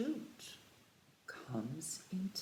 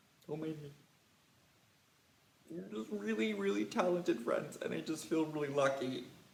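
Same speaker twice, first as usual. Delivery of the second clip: loud, overcome, teary gushing with happy tears; 2 semitones lower, 6 dB louder than usual. Praising the viewers' magic, playfully getting choked up: pretending to be teary. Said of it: "I'm getting emotional because you're just so good at magic".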